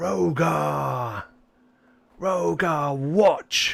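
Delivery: high, creaky, rough, drawn-out minotaur-like beast voice. Game master voicing the Minotaur as it is spotlighted, roaring Minotaur. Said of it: "it is going to roar".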